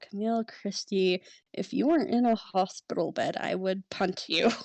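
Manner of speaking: annoyed grumbling. Voicing a character at a hospital bed: muttering under his breath. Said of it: "he just mutters under his breath".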